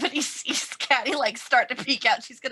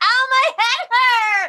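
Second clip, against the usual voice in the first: very high, very loud anguished wail, drawn out; 13 semitones higher, 8 dB louder than usual. Voicing a character faking a headache to distract: screaming in pain. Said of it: "start screaming and holding her head like".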